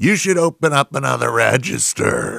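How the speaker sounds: put-on venomous tone. Retelling what a man said to the young man at the register, venomous and bullying. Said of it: "with venom dripping from his every bullying word".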